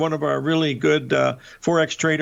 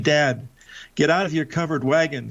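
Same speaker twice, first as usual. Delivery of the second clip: put-on whispered voice. Retelling what a daughter whispered during an argument: imitating Jill whispering. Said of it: "she whispers to me".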